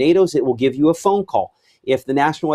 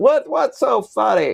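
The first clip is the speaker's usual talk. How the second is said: put-on creaky, pitched-up, grumpy crotchety old man voice; 9 semitones higher than usual. Hearing folks cackling behind the scenes, asking them in a crotchety old guy voice. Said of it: "I sound like a crotchety old guy saying that".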